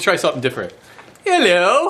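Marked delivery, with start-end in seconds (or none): 1.2-1.9 really bad put-on British accent, pitched up. Trying a different greeting than hi guys, in a really bad British accent. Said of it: "that's my that's my really bad British accent".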